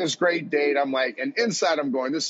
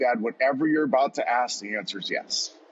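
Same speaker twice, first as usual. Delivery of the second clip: normal talking voice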